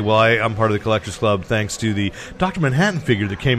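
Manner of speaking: ordinary talk, nothing marked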